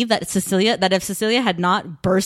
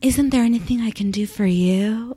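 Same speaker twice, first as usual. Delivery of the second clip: mock condescending, patronizing tone; 2 semitones higher than usual. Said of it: "she sounds so condescending, patronizing".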